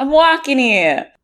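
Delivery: put-on New York accent. Joking with another speaker before the intro: put-on New York accent. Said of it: "she's New York now".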